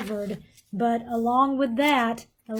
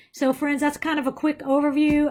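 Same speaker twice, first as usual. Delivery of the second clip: rattled-off, quick, hurried delivery; 4 semitones higher than usual. Wrapping up a quick overview for listeners, talking fast. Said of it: "I feel like I'm talking fast".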